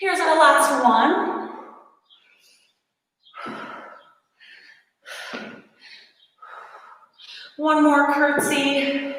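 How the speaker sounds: trembling voice. Counting down the last exercise reps aloud: shaky voice from exercise. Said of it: "you can hear it in my voice. Shaky already".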